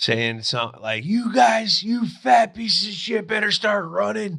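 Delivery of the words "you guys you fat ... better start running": imitated yelling, pitched higher. Retelling an offensive line coach at rookie camp: imitating Scar yelling. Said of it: "Scar yelling at Seabass".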